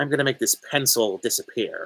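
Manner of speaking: cackling, cackling character voice. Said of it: "when he's like".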